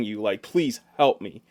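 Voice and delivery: ordinary talk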